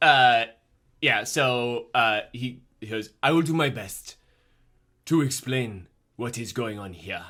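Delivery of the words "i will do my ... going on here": put-on speaking in South African accent. A game master voices a character answering the players, in a South African accent. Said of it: "like a South African accent".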